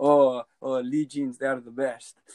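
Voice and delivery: put-on speaking with Bulgarian accent. Speaker quoting a Bulgarian waiter from a former job, Bulgarian accent. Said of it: "is that your Bulgarian impression?".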